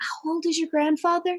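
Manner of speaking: very quiet, secretive hush. Leaning close to the portcullis, a character questions Lythander: talking very quietly. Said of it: "so that he can talk very quietly".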